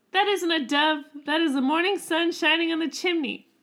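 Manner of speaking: scornful, scolding stepmother voice. Telling the Hansel story aloud, voicing the mother in a mean stepmother voice. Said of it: "really good at that voice of the mother".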